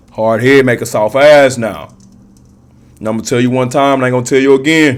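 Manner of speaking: loud, stern, fatherly dad voice. During a card reading for viewers, the speaker gives advice imitating their dad. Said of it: "That's my dad voice".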